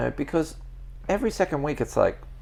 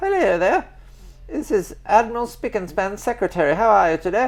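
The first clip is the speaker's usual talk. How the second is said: very high, put-on English woman accent; 9 semitones higher, 7 dB louder than usual. Retelling a phone call from an admiral's secretary: English lady accent. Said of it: "It's an English lady, so I'll do your accent".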